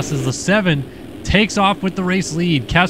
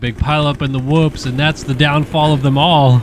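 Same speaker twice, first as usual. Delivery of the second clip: ordinary talk, nothing marked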